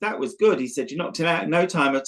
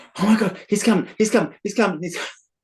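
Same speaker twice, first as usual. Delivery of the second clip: frantic, high, rattled-off, panicked repetition; 5 semitones higher than usual. Retelling a young lad's words as an intruder broke in: imitating a panicking lad.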